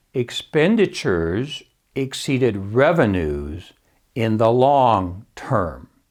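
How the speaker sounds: very slow, carefully measured words. Retelling how a CPA in the crowd answered a question, very slow and careful. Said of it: "said very slowly and carefully".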